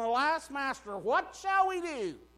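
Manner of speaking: high-pitched shouted cry. Retelling a servant's cry to his master: imitating someone yelling. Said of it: "he's yelling".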